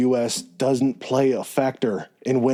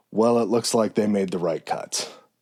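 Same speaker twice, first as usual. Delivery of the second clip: put-on mutter under breath, lower; 3 semitones lower than usual. Retelling a father's remark while watching TV with his son: imitating a mutter under breath. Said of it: "kind of mutter under his breath".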